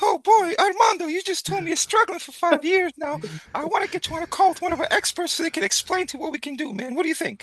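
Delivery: squeaked out really high. Role-playing a sales pitch to a prospect, in a Mickey Mouse voice. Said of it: "Hit him with the Mickey Mouse".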